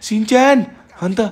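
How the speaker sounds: high, loud call projected across.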